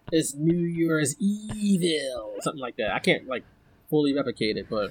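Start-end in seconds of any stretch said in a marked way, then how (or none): 0.1-2.3 very slow, weird, warped modulator-distorted voice. Imitating the caller from a horror movie, New Year's Evil modulator voice. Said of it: "with like the voice modulator, and he'd be like".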